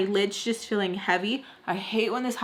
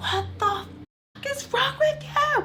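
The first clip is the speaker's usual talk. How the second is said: play-acted high, shrill, enraged scream, climbing way up. Speaker retells screaming at someone who smelled of tequila, retelling own screaming. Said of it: "I'm like screaming psycho".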